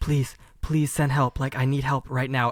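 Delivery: mock hushed, whispered pleading tone. Acting out a caller hiding in a closet: imitating a whispered plea for help. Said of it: "could you speak up a little bit? I can't hear ya".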